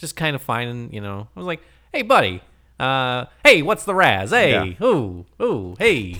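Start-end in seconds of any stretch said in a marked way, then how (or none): 1.9-6.2 put-on Toledo accent. Retelling walking around greeting people in town, in a put-on Toledo accent. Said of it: "In my Toledo accent".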